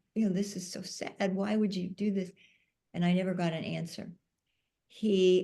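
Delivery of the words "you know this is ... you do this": normal talking voice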